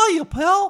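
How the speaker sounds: very high, very loud cartoon mouse voice. Acting out Eric Cartman meeting Mickey Mouse; do a Mickey Mouse voice. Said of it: "when Eric Cartman met Mickey Mouse".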